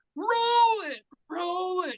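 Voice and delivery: very high, very slow, drawn-out scream. Telling about a woman in a Jeep demanding it be rolled: retelling someone screaming. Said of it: "She's screaming".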